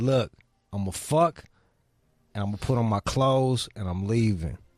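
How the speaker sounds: mock firm, authoritative, sultry, sexy tone. Retelling what was said to a date: imitating an authoritative sexy tone. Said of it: "in a real authoritative way so that it sounded sexy".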